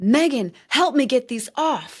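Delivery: high, loud, furious yell. Retelling a restrained husband yelling for help: imitating Michael yelling. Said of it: "he yells".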